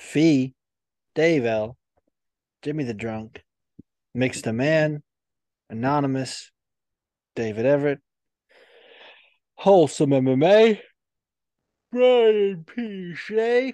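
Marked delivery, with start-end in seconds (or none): 11.9-13.7 word stretched through a yawn, very high-pitched. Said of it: "I said that I was yawning".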